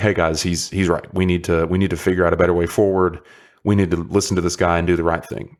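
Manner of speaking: ordinary talk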